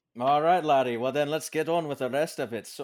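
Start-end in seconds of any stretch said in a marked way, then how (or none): 0.2-1.0 put-on Scottish accent sounding Irish, louder. Joking with a co-host who claims scottish roots: put-on scottish accent sounding irish. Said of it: "that sounded Irish".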